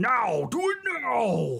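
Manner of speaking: very slow barked command, stretched and swooping. Voicing a character who signals his allies to attack: shouting a command. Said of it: "He shouts".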